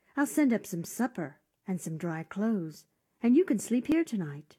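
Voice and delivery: plain reading voice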